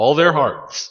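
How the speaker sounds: playful, theatrical choked-up emotion, pitched high. Praising the characters fans love, playfully getting a little emotional. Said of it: "that was me getting a little emotional".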